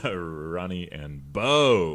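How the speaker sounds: weight lands on Bo. Practicing the show title ronnie and bo, stress on bo. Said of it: "That's where we put the emphasis on Bo".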